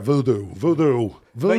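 voodoo said in put-on Austrian accent. Showing how a man says a word, austrian accent impression. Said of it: "That's his Austrian accent".

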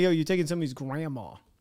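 normal talking voice

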